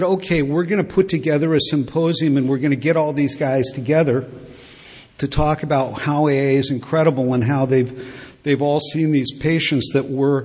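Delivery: ordinary talk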